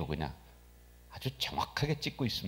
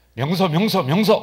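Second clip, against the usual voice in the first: shrill, very high-pitched, very loud urgent calling out; 9 semitones higher, 14 dB louder than usual. In a sermon, showing what an urgent call means: calling the name urgently. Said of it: "급하게 부르면은".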